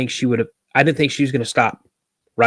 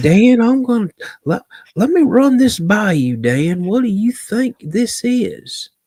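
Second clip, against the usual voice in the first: put-on very high, slow, unhurried Southern Arkansas accent; 10 semitones higher than usual. Imitating a man who calls him to chat, in a slow Southern Arkansas accent. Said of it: "he's got that slow Southern Arkansas accent".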